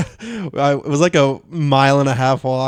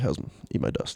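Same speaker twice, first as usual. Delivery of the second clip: put-on mutter, lower and quieter; 4 semitones lower, 12 dB quieter than usual. Retelling passing a slow walker: imitating muttering under breath. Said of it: "Under my breath".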